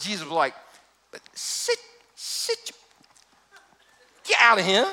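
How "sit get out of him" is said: put-on Southern accent, higher pitch. Retelling a Bible passage, giving Jesus's command as a southern-accent Jesus. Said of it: "It's a southern version".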